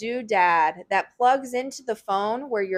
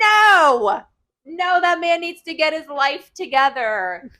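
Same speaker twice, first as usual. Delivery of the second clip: raised, loud, high shouting, no drawn out; 6 semitones higher, 5 dB louder than usual. Ranting about a man who needs to get his life together: yelling. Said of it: "I'm yelling".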